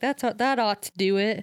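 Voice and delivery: plain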